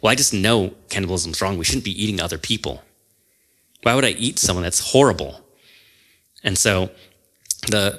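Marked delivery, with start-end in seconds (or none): none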